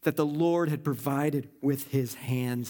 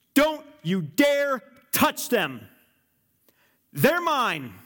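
put-on loud, swooping, powerful, thundering father voice; 9 semitones higher, 5 dB louder than usual. Speaker voicing a father warning off his children's bully: thundering powerful father voice. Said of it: "the voice of a powerful father thundering".

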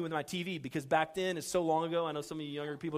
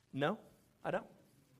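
mock sour, bitter tone; 4 dB quieter than usual. Retelling refusing the wife's request to help the neighbor: imitating own bitter reply. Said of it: "I was bitter".

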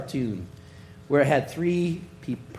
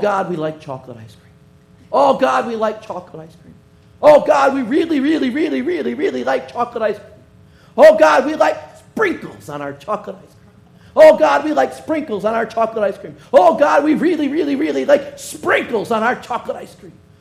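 mock delivery, higher pitched and louder; 12 semitones higher, 10 dB louder than usual. Acting out a cartoon character praying: imitating a Pentecostal praying. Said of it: "That was the Pentecostal".

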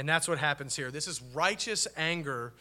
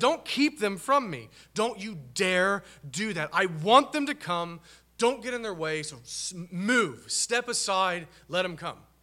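loud, angry, mock indignant scolding tone; 3 semitones higher, 5 dB louder than usual. Speaker explains a Bible text by acting out Jesus's words, imitating an angry rebuke. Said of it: "He's mad. He's angry with them. He says".

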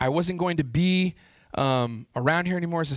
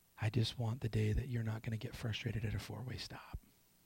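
very hushed, sweet, tender, gentle voice; 6 semitones lower, 14 dB quieter than usual. Retelling what a voice said at a four-way stop: imitating a sweet, gentle voice. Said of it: "this sweet, gentle voice said to me".

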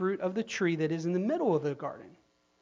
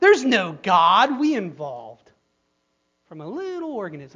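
loud, heavy, swooping sarcastic tone; 7 dB louder than usual. Mocking a view the preacher rejects, sarcastically voicing a belief. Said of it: "I'm being sarcastic".

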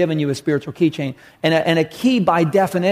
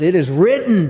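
put-on commanding voice with full authority. Retelling Jesus answering the devil in the desert: with authority. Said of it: "with authority at him".

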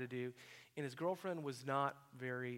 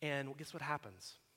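usual speaking voice

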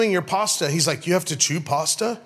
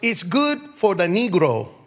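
put-on Thai accent in English. Speaker retelling what a waitress said, imitating a Thai accent. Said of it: "That's the best Thai accent I can do".

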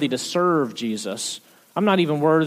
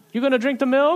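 put-on high, curious little-kid chatter; 10 semitones higher than usual. Retelling a two-year-old's running commentary at home: imitating Reuben. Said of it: "it's just this running commentary".

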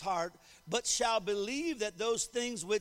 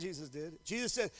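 usual speaking voice

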